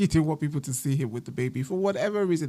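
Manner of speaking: giggling, laughing through the words. Summarizing a story that sounds ridiculous, laughing while talking. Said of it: "I'm laughing because it's just".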